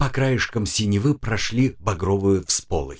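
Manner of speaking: ordinary delivery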